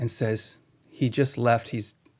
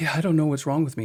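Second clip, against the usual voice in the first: weepy, tearful voice, crying through tears; 4 semitones higher than usual. Retelling a man's words at a counseling visit: imitating someone crying. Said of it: "And he's crying".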